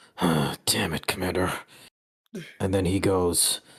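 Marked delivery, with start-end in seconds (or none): 0.2-1.5 irritated, fed-up, annoyed grumbling, muttered under breath. The narrator voices Goga muttering under his breath to the commander. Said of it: "Goga mutters under his breath".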